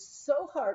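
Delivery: ordinary delivery, nothing marked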